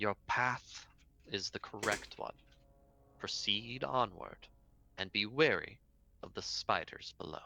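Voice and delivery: disembodied, ethereal, ghost-like voice. Narrator voicing a voice that speaks into the listener's mind, ethereal ghost-like voice. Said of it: "almost ghost-like voice sort of speak directly into your mind".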